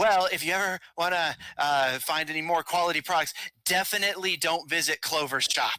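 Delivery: voice projected upward, cast indirectly. Voicing a suspicious shopkeeper speaking toward the ceiling: projecting voice upward. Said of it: "project his voice towards the ceiling".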